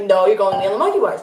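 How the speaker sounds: normal talking voice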